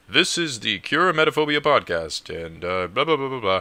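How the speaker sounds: loud, booming professional announcer voice. A podcaster with no intro music imagines an announcer, in a booming announcer voice. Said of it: "sounded a really booming voice".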